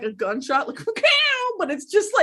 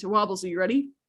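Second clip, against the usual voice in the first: grave, serious, low voice; 7 semitones lower, 4 dB quieter than usual. Asking Wobbles if he's ready, in a serious voice. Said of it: "I'm gonna use my serious voice".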